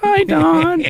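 put-on very high childlike voice, like a nine-year-old. Retelling going into the boss's office: imitating own nine-year-old voice. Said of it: "I had the nine-year-old voice".

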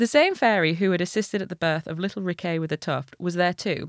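ordinary delivery, nothing marked

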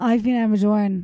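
voice gone hoarse. Signing off at the end of the recording, hoarse voice. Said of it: "I got a bit hoarse there".

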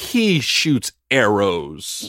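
snarky, sneering, snide, swooping delivery. Debating whether Clint Barton counts as an original Avenger, snide tone. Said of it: "Because you said it snidely".

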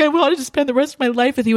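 tearful sobbing voice. Retelling a reality-show breakup scene: imitating Tom Sandoval crying. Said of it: "And Tom's, like, crying. He's like".

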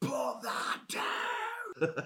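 put-on screaming, barking guard voice. Retelling how a guard screamed at him: imitating a guard screaming. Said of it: "He screamed at me".

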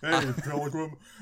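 deliberately bad put-on cowboy voice. Joking about putting on a cowboy voice: John Wayne impression. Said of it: "my worst John Wayne, uh, impression".

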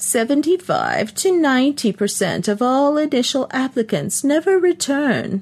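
put-on trembling old woman voice. Reading a story, an old woman answers Charlesy: quavery old woman voice. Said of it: "the old woman said in a quavery voice".

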